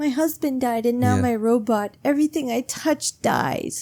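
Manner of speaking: overblown, theatrical, high, slow dramatic lament. Retelling a book character's line in her most dramatic fashion: imitating someone being very dramatic. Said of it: "in her most dramatic fashion".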